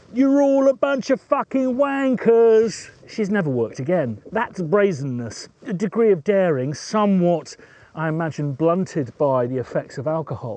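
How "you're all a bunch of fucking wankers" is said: mock scream at the top of the voice, very high. Retelling a drunk woman on a table at a party: imitating a scream at the top of her voice. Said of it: "screamed at the top of her voice".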